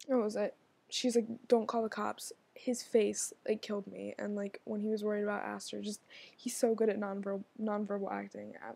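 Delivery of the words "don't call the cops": usual speaking voice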